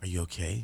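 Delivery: barely-there hush, very quiet, super soft. Retelling a question asked during a Skype audition: imitating a super soft voice. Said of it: "in this super soft voice".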